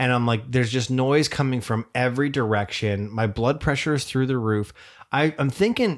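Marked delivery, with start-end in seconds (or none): none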